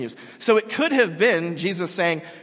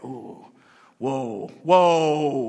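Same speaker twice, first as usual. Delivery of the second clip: mumbling very slowly; 4 semitones lower than usual. Retelling the Pharisees' reaction to Jesus, mumbling the Pharisees' words. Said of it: "and they're mumbling".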